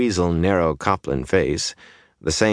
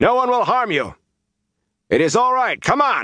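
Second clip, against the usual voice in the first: shrill shout pitched very high. He shouts again as some slowly move to obey, shouting. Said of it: "and he shouted again".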